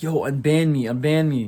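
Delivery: desperate, repeated pleading. Retelling begging on a forum to be unbanned, retelling a desperate plea. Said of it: "Like I was pleading".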